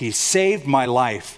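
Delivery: plain reading voice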